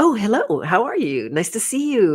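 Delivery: bubbly put-on phone voice. Describing a family member answering the phone after being mean, mock bright and bubbly. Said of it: "they're all like bright and bubbly".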